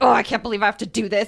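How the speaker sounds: grouchy, put-upon, grumpy grumbling tone. Retelling own complaint about chores: imitating own grumpy complaining. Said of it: "I'm more of the grumpy comments".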